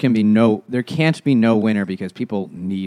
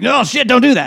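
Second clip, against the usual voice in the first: flustered, shrill, sputtering panic, very high-pitched; 14 semitones higher, 5 dB louder than usual. Retelling what the announcer said over the intercom across the sky, imitating his sputtering. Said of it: "He's like sputtering like".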